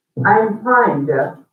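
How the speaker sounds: very cold, chilly tone. Illustrating how feeling differs from words, answer a greeting in a very cold tone. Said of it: "you had a very cold uh, tone to your voice".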